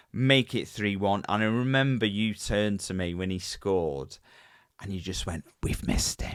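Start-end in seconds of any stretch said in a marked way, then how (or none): 5.6-6.3 put-on creepy voice. Recalling what the listener said to him when a player scored, creepy voice. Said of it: "In that creepy voice as well".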